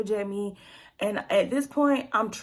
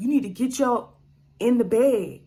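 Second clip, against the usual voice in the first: put-on, raised voice; 5 dB louder than usual. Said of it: "had his voice that high to me".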